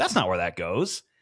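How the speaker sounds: play-acted, breezy, quick, low, playful teasing. Retelling what the speaker said to a woman who lost her mind, retold playful tone. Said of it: "like playful".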